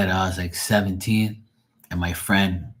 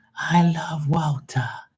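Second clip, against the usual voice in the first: put-on very high Boston accent, commentator style; 9 semitones higher than usual. Showing how the name sounds in the accent: Boston pronunciation of Walter. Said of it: "they have that accent".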